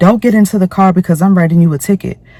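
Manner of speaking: acted-out, high-pitched carrying-on yelling. Retelling the parking officer's words about the ticket: imitating an officer yelling. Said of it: "literally yelling".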